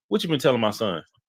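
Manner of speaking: ordinary talk, nothing marked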